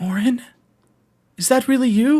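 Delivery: very high voice cracking and breaking apart. Voicing a character who recognizes someone: broken voice. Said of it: "in just, like, a broken voice".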